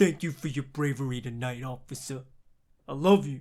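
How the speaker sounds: put-on thick, heavy Brooklyn accent. Quoting a line said to a dad: thick brooklyn accent. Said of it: "that little thick Brooklyn accent he does".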